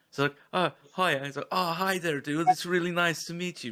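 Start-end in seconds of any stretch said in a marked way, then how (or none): 1.5-3.7 bad, awful, put-on, pitched-up Scandinavian accent. Retelling how a man greeted the speaker on meeting him, awful Scandinavian impression. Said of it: "Like really awful Scandinavian impression".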